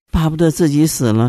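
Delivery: normal talking voice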